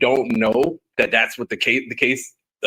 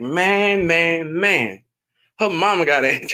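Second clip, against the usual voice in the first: high-pitched, very slow, every word drawn out; 5 semitones higher than usual. Retelling a favorite movie scene: Chris Tucker impression. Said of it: "Chris Tucker's like".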